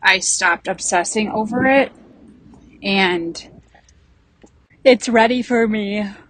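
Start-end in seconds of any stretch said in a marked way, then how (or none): 1.3-6.0 speech stretched out through a yawn. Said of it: "Sorry, I'm yawning".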